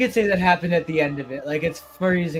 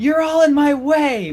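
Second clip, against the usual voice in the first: shrill, very high, loud shrieking yell; 12 semitones higher, 7 dB louder than usual. Voicing a possessed character lashing out at everyone: screeching yell. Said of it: "just yelling out".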